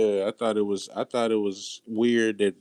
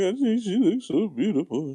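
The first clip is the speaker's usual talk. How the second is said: put-on nervous shaky voice, higher-pitched; 10 semitones higher than usual. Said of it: "she just shaky".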